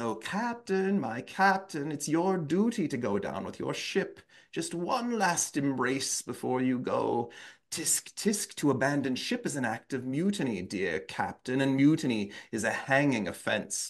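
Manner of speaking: ghostly, mocking, taunting spectre voice. Performing a ghost taunting the captain, in a ghost voice. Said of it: "There's like the ghost voice".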